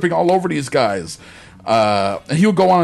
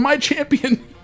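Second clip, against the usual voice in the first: imitated crying, much higher pitch; 11 semitones higher than usual. Retelling how Jean-Claude Van Damme begged a fighter, imitating Van Damme crying. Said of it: "drops to his knees and starts crying".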